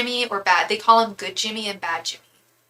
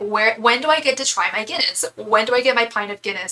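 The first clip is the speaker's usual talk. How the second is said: normal talking voice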